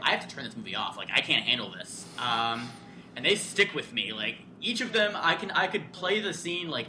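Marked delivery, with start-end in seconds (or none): none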